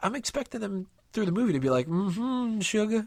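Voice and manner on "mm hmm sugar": put-on New Orleans accent. Imitating how the lemur characters might talk: put-on stereotypical New Orleans accent. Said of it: "stereotypical, like, New Orleans kind of a thing".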